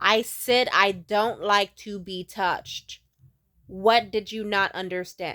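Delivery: mock stern, slow, no-nonsense scolding tone. Retelling warning a man who kept touching: retelling a stern warning. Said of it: "I just got stern".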